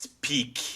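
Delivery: very calm, icy cold, controlled, menacing voice. Voicing a character who focuses on Selida: very calm, icy cold voice. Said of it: "says with a very calm, icy cold voice".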